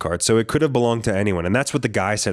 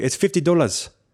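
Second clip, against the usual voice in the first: put-on Kenya-accented speech; 7 semitones higher than usual. Retelling haggling with a man over a price, imitating a Kenyan accent. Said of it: "that was a pretty good Kenyan accent".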